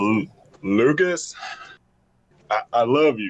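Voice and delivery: put-on cowboy voice, halting. Redoing a show's line for the others in a new way; cowboy impression. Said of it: "now I got to do a, a cowboy impression of that".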